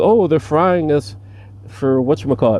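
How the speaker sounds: smug, condescending, mocking, talking-down delivery. Retelling how someone repeated a claim, mock-condescending imitation. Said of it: "tried to say it in a condescending way. Like".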